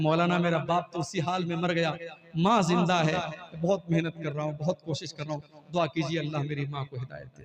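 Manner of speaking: ordinary talk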